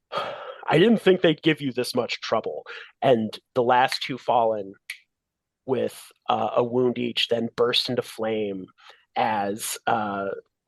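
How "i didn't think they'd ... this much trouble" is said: fast, bold, self-assured, confident voice. Narrating a fight scene, voicing a newly appeared flaming figure, bold confident voice. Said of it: "a bold and confident voice that says".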